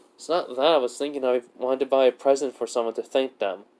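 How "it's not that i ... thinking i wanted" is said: plain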